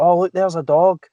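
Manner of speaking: prim, correct-sounding speech. Retelling the wife teaching the kid, imitating wife's proper accent. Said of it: "so she'll be like".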